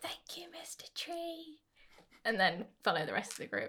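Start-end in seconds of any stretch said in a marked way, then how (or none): 0.0-1.6 very soft, very slow, pitched-up hushed whisper. Thanking a tree after it falls asleep, whispering. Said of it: "And I'm just going to whisper".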